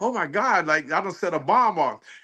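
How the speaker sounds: put-on woman's voice in sudden, flustered panic. Retelling a lady's reaction in a packed room: imitating a panicking lady. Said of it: "she all panicking like".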